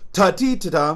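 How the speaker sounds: accent on the first note, hit loud and high.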